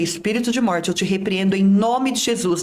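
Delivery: ordinary talk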